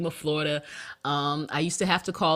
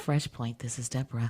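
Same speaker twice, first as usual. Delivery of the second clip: put-on sultry hotline voice, lower and quieter; 4 semitones lower, 4 dB quieter than usual. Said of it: "their receptionists sound exactly like this, the one nine hundred voice".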